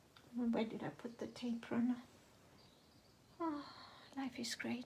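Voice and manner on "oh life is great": soft, sarcastic-sounding words on a big sigh. Looking for a misplaced tape runner: sounding sarcastic with a big sigh. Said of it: "That sounded sarcastic".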